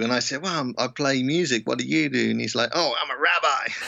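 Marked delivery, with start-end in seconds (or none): 2.7-3.7 put-on American accent, slower. Retelling a man's reply in a conversation; american accent. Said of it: "I love your American accent".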